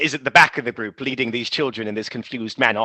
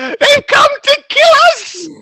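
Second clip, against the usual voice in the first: piercing, high, very loud panicked screech; 10 dB louder than usual. Game master voicing a woman in the town as the party arrives: woman screeching. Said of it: "You hear a woman screech".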